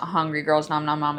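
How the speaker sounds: ordinary talk, nothing marked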